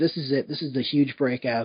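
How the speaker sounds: ordinary talk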